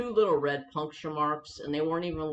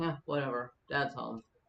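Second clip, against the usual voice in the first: mock couldn't-care-less, indifferent, uncaring tone; 3 semitones lower, 6 dB quieter than usual. Retelling how the dog reacted when coming home from work: imitating dog's uncaring attitude. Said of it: "not a care in the world".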